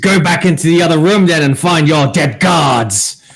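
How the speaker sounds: menacing, intimidating, high-pitched in-character scream. Voicing a character ordering monks to find their dead guards: screaming in character. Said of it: "And then he screams".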